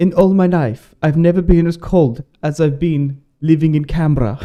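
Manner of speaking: attempted Swedish accent. Retelling what a man from the Baltics said, in an attempted Swedish accent. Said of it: "this is a Swedish accent that I'm trying to do".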